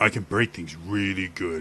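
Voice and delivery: simple tough-guy voice, pushed down deep. Demonstrating a completely different persona: dropped, deep voice. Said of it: "just by dropping my voice like that".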